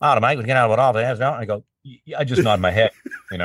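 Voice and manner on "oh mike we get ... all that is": put-on broad Australian accent, laid on thick. Asked for more of his Aussie accent, retelling a conversation: thick Australian accent. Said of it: "Can I hear more of that Aussie accent".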